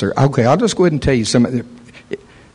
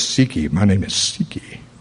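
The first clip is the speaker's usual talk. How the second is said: deep, low, hushed, otherworldly demon voice; 6 semitones lower, 5 dB quieter than usual. Retelling what it said when told to come out of her: deep voice. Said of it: "it said in a deep voice".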